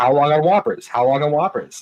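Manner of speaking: frustrated, impatient nagging, repeated over and over. Retelling a story about an increasingly frustrated man, imitating a frustrated man. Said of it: "getting more and more frustrated".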